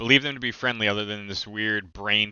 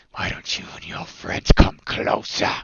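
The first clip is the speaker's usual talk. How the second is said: loud, rough, creaky snarled orc voice; 6 dB louder than usual. Game master voices a tusked creature speaking to the party, snarling.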